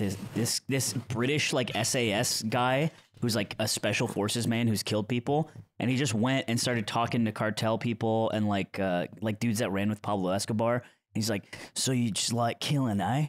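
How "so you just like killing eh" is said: imitated Australian accent. Retelling a special forces man's question to cartel people, in an australian accent. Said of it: "It's Australian now for some reason".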